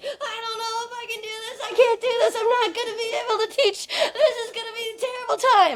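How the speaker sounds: very high, freaked-out, panicked, spiralling self-doubt. Retelling how she reacted to getting the teaching template: imitating her own past panic. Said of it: "I would freak out about it".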